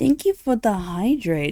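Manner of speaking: hoarse voice. Thanking viewers for a hydrate reminder: croaky voice. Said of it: "how croaky my voice was".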